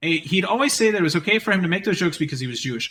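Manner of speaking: plain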